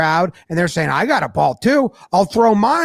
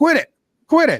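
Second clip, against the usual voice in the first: higher-pitched yelling; 7 semitones higher than usual. Retelling a player yelling at fans: imitating someone yelling. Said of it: "he's yelling at him".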